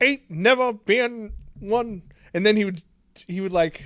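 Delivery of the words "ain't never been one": put-on British accent with Southern drawl and inflections. Mocking an actor's attempt at an accent, British accent with Southern inflections. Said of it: "doing a British accent, but with Southern inflections".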